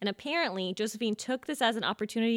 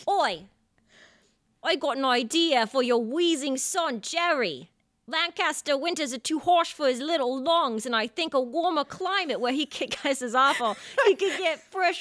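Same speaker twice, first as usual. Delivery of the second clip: put-on accent, unclear whether British or Boston; 5 semitones higher, 4 dB louder than usual. Speaker acts a scene addressing Jerry, in a put-on British or Boston accent. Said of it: "Are you British or do you have a Boston accent?".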